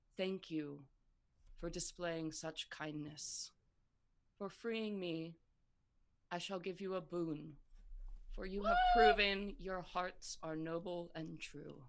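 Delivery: ancient, weak, faintly wise creature voice. Narrator voicing a winged serpent speaking into two minds, ancient, weakly wise voice. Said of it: "this ancient, like, weakly wise voice".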